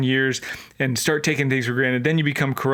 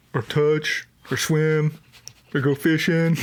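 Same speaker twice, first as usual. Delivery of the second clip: slow, sarcastic, mocking heckling tone; 2 semitones higher than usual. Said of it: "some guy in the back's going like".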